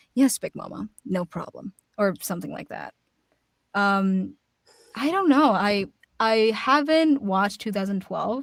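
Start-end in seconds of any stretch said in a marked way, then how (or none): 0.1-1.7 solemn, grave, dead-serious tone. Showing how she would voice Frida: really serious tone. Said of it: "in, like, a really serious tone".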